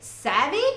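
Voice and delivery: savvy ends on a high rising lift. Teaching a word Pete says to his mom, rising pitch on savvy. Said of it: "You put that high sound on the end".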